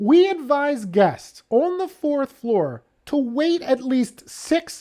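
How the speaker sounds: words broken by laughter. Reading a hotel letter aloud, laughing while reading aloud. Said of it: "I can't even read it without laughing".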